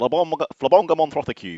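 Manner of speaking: put-on Mancunian accent. Retelling how a friend named the show: Nick Smethurst's Mancunian accent. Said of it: "in his Mancunian accent".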